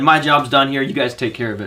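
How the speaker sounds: normal talking voice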